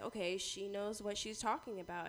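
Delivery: normal talking voice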